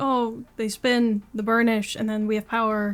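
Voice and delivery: ordinary delivery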